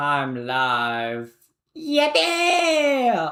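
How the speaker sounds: very high, drawn-out squeak breaking through, voice crack. Announcing to gamers that the stream is live, voice crack. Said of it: "that was a voice crack".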